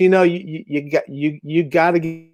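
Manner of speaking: put-on old Italian-accented broken English, halting, with repeats. Recalling an old Italian neighbor's advice, the speaker imitates his broken English. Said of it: "in broken English".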